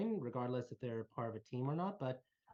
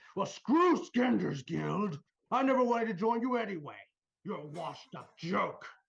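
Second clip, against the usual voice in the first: half-orc voice bellowing at full volume, very loud, high; 7 semitones higher, 9 dB louder than usual. A game master voices a half-orc standing in front, bellowing very loudly. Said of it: "the half orc person in front just bellow very loudly".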